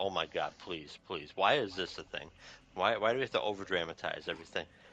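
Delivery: ordinary talk, nothing marked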